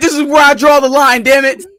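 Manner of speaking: mock very loud, shrill, high indignant outburst. Joining in on the theater story, imitating the indignant moviegoer. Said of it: "He's like".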